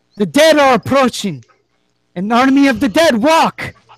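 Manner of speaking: very high-pitched, loud shout. Narrating a scene, the storyteller voices a man in a doorway: shouting. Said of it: "and he shouts".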